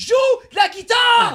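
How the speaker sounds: loud, very high-pitched shouting. Telling what he yelled at a guitar player, retelling his own shout. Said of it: "Je criais".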